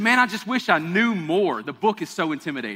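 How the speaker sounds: usual speaking voice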